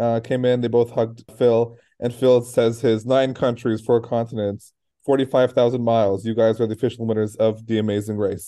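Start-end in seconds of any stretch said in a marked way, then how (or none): none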